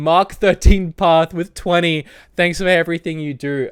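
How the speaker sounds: high, cracking voice breaking, close to tears. Thanking donors on the channel while trying not to cry, voice breaking. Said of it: "my voice is breaking".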